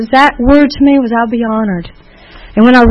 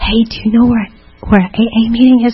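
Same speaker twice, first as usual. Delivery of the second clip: put-on whisper, slower. Recalling asking a man for directions to a meeting: retelling a whisper. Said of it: "I'm whispering because I don't want anybody to hear".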